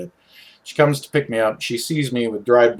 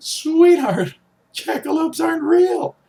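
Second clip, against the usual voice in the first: acted, very high, laughing-crying words; 3 dB louder than usual. Retelling a mom's reply as she pulls over: imitating someone laughing while crying. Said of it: "explodes into laughter, crying, going".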